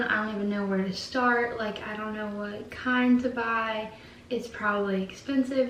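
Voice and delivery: plain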